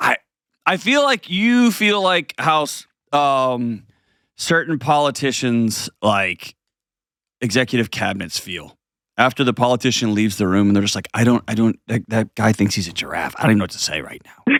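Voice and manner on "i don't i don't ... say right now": weary, thoroughly fed-up, exhausted, exasperated voice. Acting out cabinet members after a politician leaves: imitating someone exhausted and exasperated. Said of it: "like an exhausted, exasperated".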